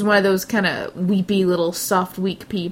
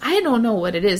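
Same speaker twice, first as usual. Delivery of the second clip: put-on trembling, shaky elderly woman's voice; 2 semitones higher than usual. Retelling an elderly lady at the YMCA hot tub, imitating a shaky old lady. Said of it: "they talk like this. They're just all kind of shaky".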